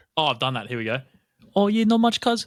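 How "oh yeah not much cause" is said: put-on very high, loud New Zealand rock-creature voice. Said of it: "the rock character from Thor's voice".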